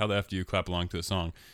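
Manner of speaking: ordinary talk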